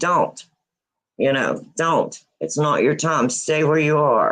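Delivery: mock-stern, put-on voice. Retelling what she said to keep the listener from stepping out: retelling a stern warning. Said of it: "she used a stern voice and said".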